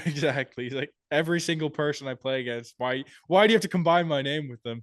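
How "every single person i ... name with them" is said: ordinary talk, nothing marked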